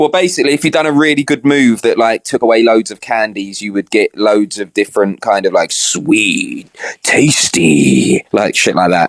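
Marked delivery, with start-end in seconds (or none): 5.7-8.2 low game announcer voice, calling out. Describing the sounds a game makes after a good move: Candy Crush voice impression. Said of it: "That's a pretty good impression".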